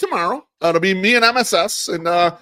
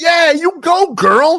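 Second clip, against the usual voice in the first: mock loud shout, much slower; 5 semitones higher, 3 dB louder than usual. Retelling what someone called out from the street behind, retelling a loud shout. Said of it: "I hear a loud noise. Someone saying".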